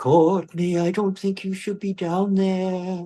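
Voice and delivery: mock trembling, wavering, quavering voice, very high. Retelling a voice calling down a tunnel, imitating Nikki's quavering voice. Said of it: "Nikki's quavering voice".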